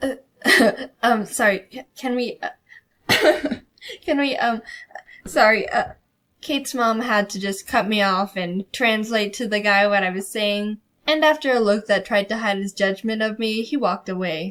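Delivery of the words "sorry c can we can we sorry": mock stammering, slow, laughing, giggling false starts. Retelling laughing at oneself mid-stutter: imitating own stutter while laughing. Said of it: "it sounded more like this".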